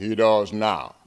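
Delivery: slow drawl with words stretched out. Retelling the new coach's reply about him playing football: Chuck Curtis drawl. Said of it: "And Chuck said in his drawl".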